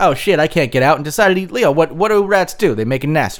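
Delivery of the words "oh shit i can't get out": ordinary talk, nothing marked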